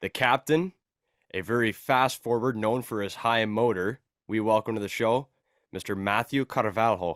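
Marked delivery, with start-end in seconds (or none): 5.7-7.2 put-on name pronounced with a Portuguese accent. Introducing a guest by name on the podcast: portuguese accent on the name. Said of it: "I love how he says it with the accent".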